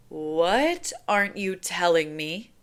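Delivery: grave, slow, deliberate, dead serious, "What" drawn out. Narrator reading a character's question, in her most serious voice. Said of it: "in her most serious voice".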